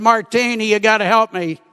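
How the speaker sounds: ordinary delivery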